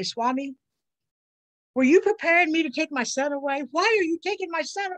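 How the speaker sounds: acted crying, tearful, angry, accusing tone. Retelling what was cried out on the drive back: reenacted crying plea. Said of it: "I cry and I say".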